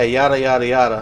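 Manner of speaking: ordinary talk, nothing marked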